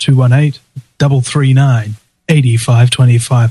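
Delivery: slowed down. Show host repeats the call-in number for listeners, slower. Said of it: "Say it a little bit slower".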